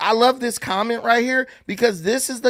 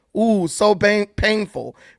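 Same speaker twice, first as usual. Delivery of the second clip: sarcastic, mocking tone. Reading out social media comments aloud, sarcastic. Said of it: "Being sarcastic".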